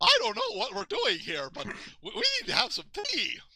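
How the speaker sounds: very high, swooping bunny character voice. Showing how Natalie Sharp did the rabbit: imitating Natalie Sharp's rabbit voice. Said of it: "Natalie Sharp when she was imitating the rabbit".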